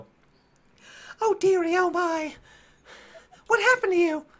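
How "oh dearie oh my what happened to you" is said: put-on very high old gnome voice. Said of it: "two older gnomes look at you and go".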